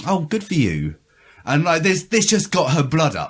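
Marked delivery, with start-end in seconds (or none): 0.1-0.9 put-on condescending, thoughtless, offhand patronising tone. Retelling how someone answered a writer: imitating a patronising tone. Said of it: "sort of very patronisingly".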